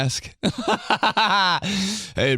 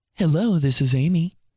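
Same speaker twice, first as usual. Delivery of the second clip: totally changed put-on telephone voice. Speaker imitates mom switching voices to answer the phone, imitating Amy's phone voice. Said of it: "That's my mom's whole entire life".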